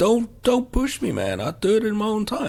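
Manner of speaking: bad put-on American accent. Quoting a character's line while describing a scene, really bad american accent. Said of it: "It's my really bad American accent".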